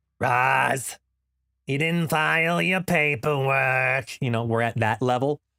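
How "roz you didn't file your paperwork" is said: hoarse, very slow cartoon-monster voice with drawn-out word. Losing their voice, the speaker quotes a cartoon line as Mike Wazowski. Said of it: "It's a little bit of Mike Wazowski".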